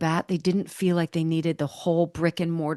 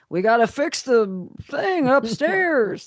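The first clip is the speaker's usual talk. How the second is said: put-on longshoreman voice, slow, with big swoops; 7 semitones higher, 4 dB louder than usual. Guessing how the guest's father talked: imitating the guest's father. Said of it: "That's a great impression".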